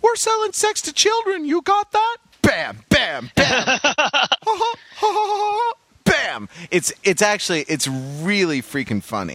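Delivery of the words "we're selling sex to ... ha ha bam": imitated cartoon mouse character voice. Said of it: "is like".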